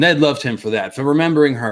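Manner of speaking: ordinary delivery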